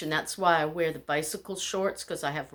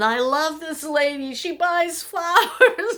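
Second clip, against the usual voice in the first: very high, loud, street-vendor-style shout; 10 semitones higher, 7 dB louder than usual. Retelling the flower seller praising a customer: imitating a flower seller yelling. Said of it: "He's yelling".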